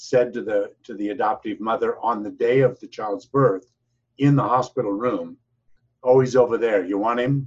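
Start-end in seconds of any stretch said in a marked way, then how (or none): 6.0-7.5 gruff, rough voice, louder. Retelling what someone said to the adoptive mother in the hospital room, gruff voice. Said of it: "In a gruff voice".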